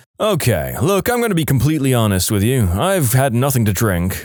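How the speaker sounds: plain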